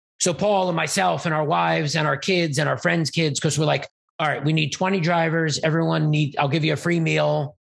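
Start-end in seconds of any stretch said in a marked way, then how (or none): none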